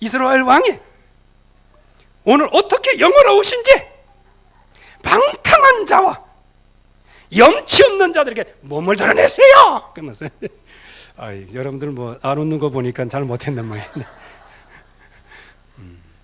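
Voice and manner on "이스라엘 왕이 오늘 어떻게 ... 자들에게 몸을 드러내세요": very high, sing-song, swooping put-on woman's voice. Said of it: "미갈 내 목소리로 해볼라 했는데".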